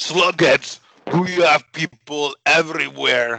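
very loud, high, bad put-on Russian accent. Reading out a signed message to the others: bad put-on Russian accent. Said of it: "My Russian accent is horrible".

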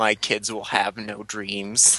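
deep, soft, hushed, theatrical dramatic voice. Quoting the other speaker's earlier line back to them, in a mock-dramatic voice. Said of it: "You said it like in your dramatic voice".

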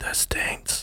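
hushed, breathy whisper under the breath. Recalling what a man would whisper to the guys, retelling a whisper. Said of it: "and then he'd whisper like".

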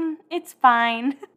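slow, high, breezy and dismissive tone.

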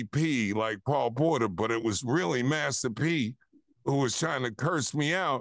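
plain

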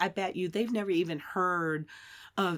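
ordinary delivery

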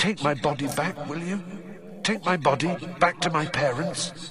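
soft, high-pitched half-whisper. The figure of a dead boy speaks to the other boy: half-whispered. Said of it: "whispered the figure of Cedric".

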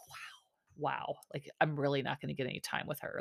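play-acted, barely voiced, whispered, sarcastic wow. Recapping a show, acting out a man's mouthed reaction on camera, retelling a sarcastic wow. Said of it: "Like that kind of like sarcastic wow".

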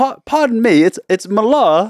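put-on British accent. Talking in British with the others, the speaker corrects a greeting: put-on British accent. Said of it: "we were talking in British".

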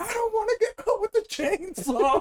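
very high, panicked scream. Retelling what she said during the gift opening: imitating her screaming. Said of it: "She starts screaming".

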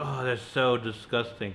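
ordinary delivery

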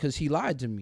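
ordinary talk, nothing marked

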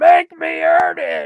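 very high-pitched, very loud, all-out screaming. Retelling how a man started screaming on Raw while people held him back, imitating someone screaming. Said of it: "he starts screaming".

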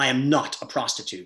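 mock angry speech. Retelling what a colleague said to him: imitating someone speaking angrily. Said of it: "with anger in her voice".

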